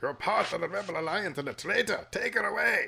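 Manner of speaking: put-on high-pitched Scottish accent. Imagining David Prowse's own voice kept in the role, with a kind of Scottish accent. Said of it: "that kind of Scottish accent".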